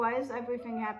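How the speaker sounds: ordinary talk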